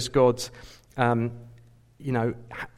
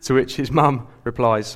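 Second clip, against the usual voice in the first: plain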